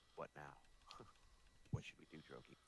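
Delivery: soft, quiet whispered aside. Whispering a question in character to a companion: whispering to droki. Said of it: "I'm gonna whisper to Droki".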